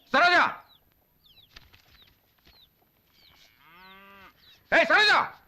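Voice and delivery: shouting. Calling a woman over to ask about a photo, shouting. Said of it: "ஏன் இப்படி கத்திட்டே இருக்கீங்க?".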